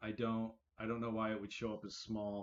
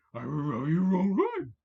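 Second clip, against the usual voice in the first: very loud, high, belted cartoon dog voice; 7 semitones higher, 9 dB louder than usual. Trying out talking like Scooby-Doo, Scooby-Doo voice. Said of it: "when I try to talk like Scooby Doo".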